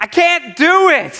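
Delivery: put-on yelling voice of a small child. Retelling how a son yells from the top of a slide: imitating Ezra yelling. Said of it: "he yells out to me and my wife and he goes".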